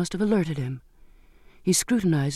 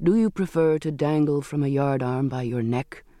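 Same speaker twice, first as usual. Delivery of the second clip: ordinary delivery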